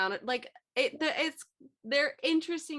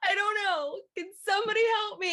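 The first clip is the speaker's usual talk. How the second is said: put-on koala scream, higher and louder; 10 semitones higher, 4 dB louder than usual. Voicing a koala that screams into the void: imitating a screaming koala. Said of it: "so they just scream into the void".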